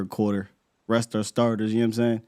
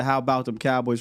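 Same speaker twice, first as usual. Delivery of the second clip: usual speaking voice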